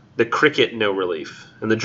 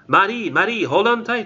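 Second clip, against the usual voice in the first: hesitant, very high-pitched attempted German accent; 10 semitones higher than usual. Reading a poem aloud, voicing a quoted cousin: attempted German accent. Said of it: "I have no idea if that's the right accent".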